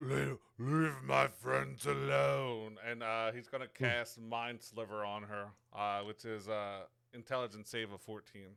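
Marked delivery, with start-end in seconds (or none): 0.0-2.8 gravelly, creaky throaty voice. A player voices his character Girk speaking to her: Girk's guttural voice. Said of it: "in Girk's Girk's guttural voice".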